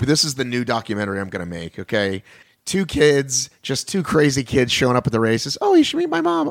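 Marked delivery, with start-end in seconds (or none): 5.6-6.5 horrible put-on female voice, very high pitch. Pitching a documentary about two kids at the races, bad put-on female voice. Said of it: "that's a horrible impression of female voices".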